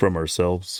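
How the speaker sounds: deep, low-pitched voice. Retelling what the guy who hadn't spoken yet said: imitating a deep voice. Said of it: "the one who hasn't spoken yet with a deep voice".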